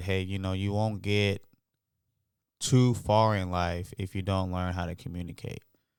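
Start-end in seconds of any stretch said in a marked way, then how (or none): none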